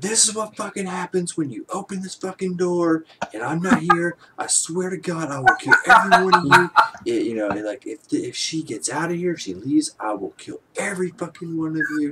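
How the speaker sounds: shrill, very high, loud furious yelling. Telling how a man stepped into the hall and started yelling, retelling a furious yell. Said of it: "just like starts yelling".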